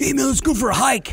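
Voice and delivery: wired, amped voice. Imitating hikers high on coke who want to go hiking: imitating a hiker high on coke. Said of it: "They were high on coke, and they're like".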